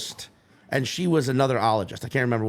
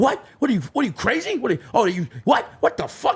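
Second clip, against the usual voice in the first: acted, sudden, high swooping angry outburst, stumbling over words; 9 semitones higher than usual. Retelling how people reacted to a Chiefs prediction: imitating angry people. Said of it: "they were so angry out of nowhere".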